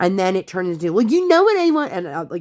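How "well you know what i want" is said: put-on play-acted very high, shrill, snappy child voice. Retelling what her kid said at the restaurant: imitating a child snapping. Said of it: "snapping at mommy".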